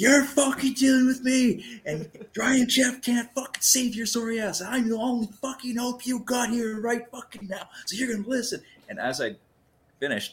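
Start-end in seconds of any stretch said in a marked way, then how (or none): 0.0-8.6 very high, loud, in-your-face yelling. Retelling a confrontation with an angry man: retelling yelling in someone's face. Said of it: "I fucking just yelled in his face".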